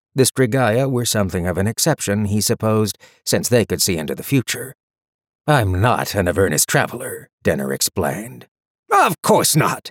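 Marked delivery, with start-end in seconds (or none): 8.9-9.9 scornful, dismissive, contemptuous, pitched up. Reading a story, one character dismisses another's explanation, contemptuous. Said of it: "Harriman said contemptuously".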